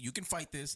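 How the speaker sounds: plain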